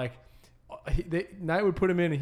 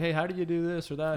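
plain

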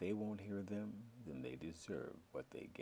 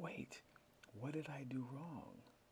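high, panicked voice; 7 semitones higher, 4 dB quieter than usual. Narrator reads a man questioning an angel, asking in a panic. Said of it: "he asked in a panic".

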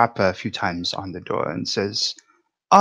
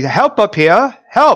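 very high, loud shouting; 10 semitones higher, 5 dB louder than usual. In character, calling down to the innkeeper for help: shouting down for help. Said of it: "he would call down to, to the innkeeper".

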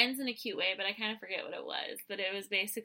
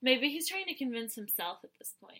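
ordinary talk, nothing marked

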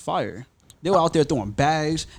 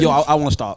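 plain

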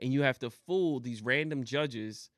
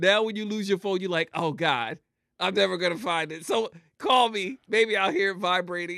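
all-out loud excited yelling, pitched up; 6 semitones higher, 6 dB louder than usual. Chatting about phones always on silent, yelling. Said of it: "I am yelling".

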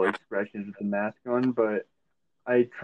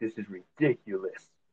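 quiet, muttered, under-the-breath delivery; 6 dB quieter than usual. Retelling what a customer said while walking away, imitating a mutter under the breath. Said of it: "under her breath, was like".

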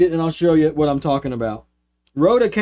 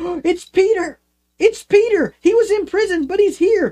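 put-on very high, thrilled, excited young girl's voice; 13 semitones higher than usual. Retelling a young girl answering the door and finding peter there, imitating an excited girl. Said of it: "she's so excited".

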